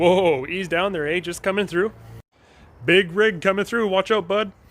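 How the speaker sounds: Canadian-accented speech. Showing how Canadians say excuse me, in a Canadian accent. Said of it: "How different Canadians say".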